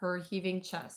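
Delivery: ordinary delivery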